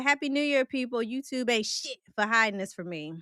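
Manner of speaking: plain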